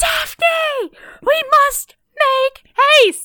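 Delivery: shrill, very high, very slow, stretched-out shriek. Retelling the opening scene of a show: imitating someone screaming. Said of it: "she just starts screaming".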